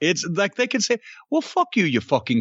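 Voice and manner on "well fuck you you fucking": mock British accent with a sing-song lilt. Showing how british people can swear and still sound nice: sing-song british accent. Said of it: "it's just so sing-song".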